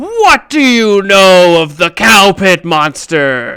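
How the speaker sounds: grand, proclaiming call from above. Speaker acting out a voice booming from the top of a tower, loud booming voice. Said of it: "even louder booms from the top of the tower".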